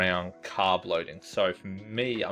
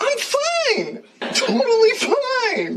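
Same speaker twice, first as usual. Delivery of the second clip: squeaky voice, much higher and louder; 10 dB louder than usual. A month from their marathon, speaker insists they're fine: loud and squeaky. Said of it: "coming out all loud and squeaky".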